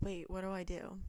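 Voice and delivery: ordinary talk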